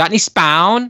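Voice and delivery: put-on thick weird Irish accent. Retelling a customer's question on walking into a shop, thick weird irish accent. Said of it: "with a very thick, like weird Irish accent".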